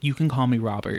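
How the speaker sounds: ordinary talk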